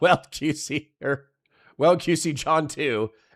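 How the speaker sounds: slow speech, breaking into laughter partway through. Reading out a donation message aloud, laughing while talking. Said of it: "I'm sorry for laughing".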